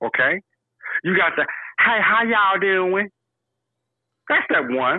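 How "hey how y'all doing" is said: put-on, pitched-up fake Southern accent. Speaker demonstrating one of three kinds of down south dialect: put-on down south dialect. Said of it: "three different kinds of down south dialect".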